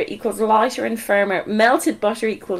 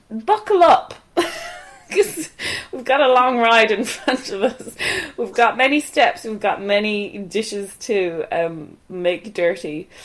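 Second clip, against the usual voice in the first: plain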